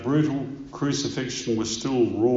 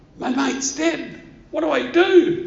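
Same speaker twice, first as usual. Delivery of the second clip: high, panicked scream. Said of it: "He's panicking".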